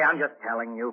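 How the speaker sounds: usual speaking voice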